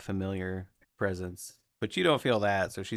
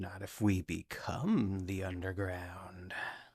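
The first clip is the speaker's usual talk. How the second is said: sly, shadowy, hushed half-whisper; 6 dB quieter than usual. A shady unseen voice answers the comment about being stabbed in sleep; shady half-whisper. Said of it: "You hear a shady voice whisper".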